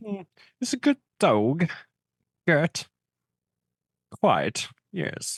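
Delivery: very high, swooping, upper-class posh British accent. Trying out a posh British way of saying it: posh British voice. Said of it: "If you're being posh about it".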